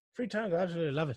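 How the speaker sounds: poor put-on Irish accent. Quoting a woman who rereads books, answering how many times she has read one, bad Irish accent. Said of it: "That was a shit Irish accent".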